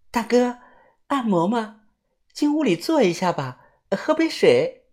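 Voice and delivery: high, sugary, coy, cooing, coquettish sweet-talk. Retelling how a woman tugged a passerby toward a massage room, mimicking a coquettish woman's voice. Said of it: "声音啊是嗲声嗲气的".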